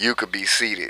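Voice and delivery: mock psychotic-sounding voice. Retelling how a woman told someone to sit: imitating a psychotic-sounding tone. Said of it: "the way she said that".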